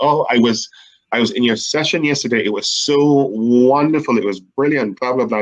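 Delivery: ordinary talk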